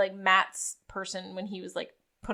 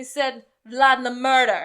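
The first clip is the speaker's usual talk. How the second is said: loud, attempted put-on Jamaican accent; 4 semitones higher, 7 dB louder than usual. Asked to repeat the news again; attempted Jamaican accent. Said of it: "but this time with a Jamaican accent".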